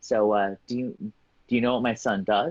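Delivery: mock whispering. Retelling a mother's question while her son was away: imitating someone whispering. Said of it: "his mom kind of whispers to me".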